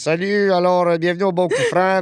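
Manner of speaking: put-on old man voice. Speaker recalls commentating over videos of his friends golfing, old man voice. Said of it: "je faisais une voix de vieillard par-dessus".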